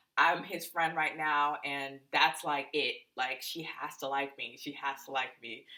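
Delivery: ordinary delivery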